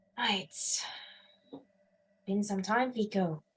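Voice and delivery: hushed, soft half-whisper close to the ear. Voicing a familiar voice speaking to the player character, half-whispering. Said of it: "sort of whispering to you".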